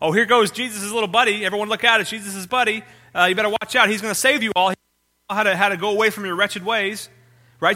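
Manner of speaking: high-pitched, teasing, sarcastic, mocking ridicule. Explaining how a woman mocked a man proclaiming salvation: imitating sarcastic mockery. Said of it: "She was being sarcastic. She was mocking him".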